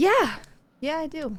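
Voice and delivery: drained, worn-out, exhausted, running-on-empty voice. Answering whether she still wants to do the show: exhausted. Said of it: "She sounded so exhausted".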